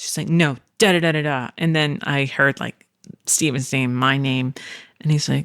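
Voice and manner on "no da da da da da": put-on loud angry voice. Retelling a parent scolding a rude kid: imitating someone getting very loud. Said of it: "got very, very loud".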